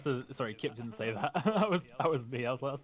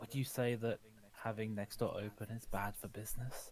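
quiet whispered voice; 3 semitones lower, 9 dB quieter than usual. Speaking in character, quietly asking her about business: whispering. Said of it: "I'm gonna whisper to her and say".

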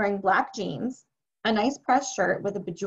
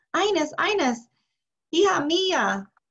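long, high calling out; 8 semitones higher than usual. An old man turns around and calls out toward the house: shouting. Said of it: "started shouting toward the house".

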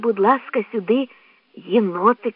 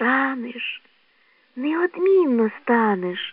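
gentle, tender, slower; 3 semitones higher, 3 dB quieter than usual. A narrator reads a little bird answering a young badger, gentle. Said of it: "лагідно мовила пташка".

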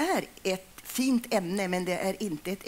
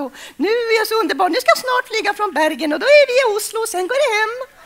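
fake, forced happy voice, much higher and louder; 14 semitones higher, 12 dB louder than usual. Showing listeners how faking a voice sounds: fake overly happy voice. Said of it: "om jag försöker vara väldigt glad".

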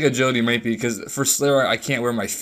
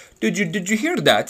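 high, put-on Indian accent laid on for effect; 8 semitones higher than usual. Retelling a phone call from a caller: imitating an indian accent. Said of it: "he had the Indian act-".

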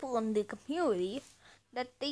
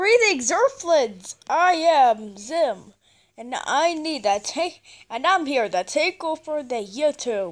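loud, booming, slow, drawn-out, grand alien voice; 10 dB louder than usual. Announcing a takeover of YouTube to Earthlings: Zim voice. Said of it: "is that Zim from Invader Zim?".

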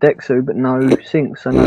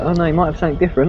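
fast, eager mock enthusiasm. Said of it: "your fucking enthusiasm in your voice".

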